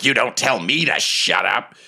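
gravelly goblin voice. Narrating an imagined goblin scene in a Lord of the Rings musical: gruff goblin voice. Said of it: "a gruffer voice say".

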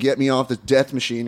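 ordinary talk, nothing marked

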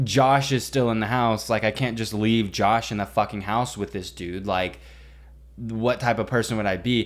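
ordinary delivery

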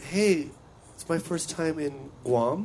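put-on slow talk. Recounting their first time in guam, acting out their own words: retelling own slowed-down talk. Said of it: "I was like slowing down the way I talk".

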